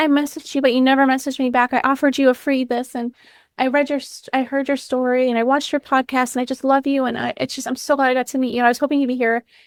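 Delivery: mock emotional, high, on the verge of crying. Retelling what a woman said on meeting at an event, imitating someone almost in tears. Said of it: "almost in tears".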